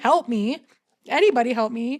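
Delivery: put-on toned-down scream, drawn-out and mild. Speaker retells screaming for somebody to help, retelling a bloodcurdling scream. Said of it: "blood curdling, screaming".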